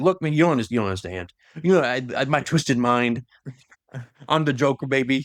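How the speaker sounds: ordinary delivery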